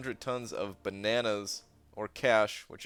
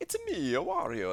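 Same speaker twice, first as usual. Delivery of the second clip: put-on cartoon voice, high and slow; 7 semitones higher than usual. Streamer asked why they sound like Wario answers in a Mario voice. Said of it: "I went to the Mario voice for Wario".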